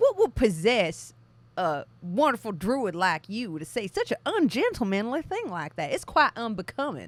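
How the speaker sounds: put-on cartoon rooster voice. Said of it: "Foghorn Leghorn".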